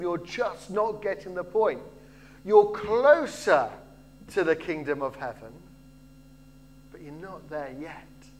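ordinary talk, nothing marked

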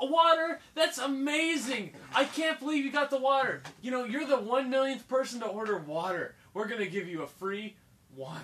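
high, loud, way over-the-top gushing enthusiasm. Mocking a restaurant waiter who is way too happy: imitating an over-the-top waiter. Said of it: "way over the top".

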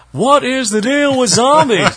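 loud belting, high and badly sung. Joking after being told a line sounded like Seinfeld: bad Seinfeld impression. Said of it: "The Imitation Police are gonna jail me".

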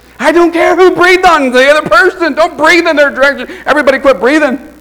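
exasperated, high, loud scolding yell.

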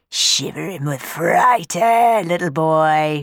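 put-on jeering taunt, stretching out "boy". A chimney sweep towering over a frightened boy before his climb, mocking. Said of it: "he mocked".

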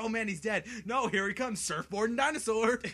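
mock frantic, loud, high panicked exclamations. Retelling a T-Rex coming at them in a game: retelling own freak-out. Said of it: "I just freak out".

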